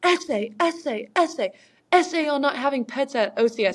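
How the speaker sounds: mock drill instructor voice, high, drawn-out yell. Retelling drill instructors scolding a candidate: imitating instructors screaming. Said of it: "And they're like".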